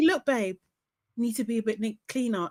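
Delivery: soft-spoken, gentle, hushed voice. Imagining Hannah sitting someone down to talk: soft voice. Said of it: "in a in a soft voice".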